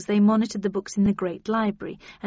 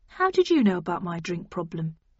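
ordinary delivery

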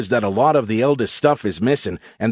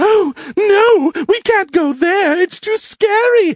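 put-on very high, squeaky, sneering, taunting little-girl voice; 4 dB louder than usual. A character mocks the listener and Count Chocula, using a mocking little girl's voice. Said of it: "He used a mocking little girl's voice".

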